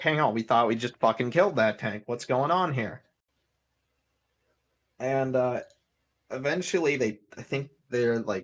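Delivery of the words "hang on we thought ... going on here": ordinary delivery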